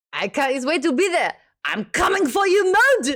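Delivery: put-on French accent, very high, loud. Retelling a radio call with an artist, quoting his reply in a French accent. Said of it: "in his French accent".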